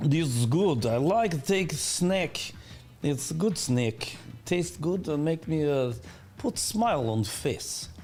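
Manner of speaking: put-on Russian accent with broken English. Pitching a snack sponsor bit for the show, in a Russian accent. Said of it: "Roll the Russian accent".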